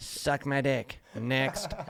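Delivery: loud, very slow, drawn-out dismissive delivery. Imitating a president shutting reporters down: Trump impression. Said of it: "Trump impersonation".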